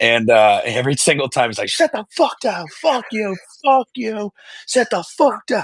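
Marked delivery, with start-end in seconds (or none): 1.7-5.6 very high, furious, angry heckling yell. Retelling how a loud fan yells at rival fans: imitating cousin Frank's angry yelling. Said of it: "and he gets animated".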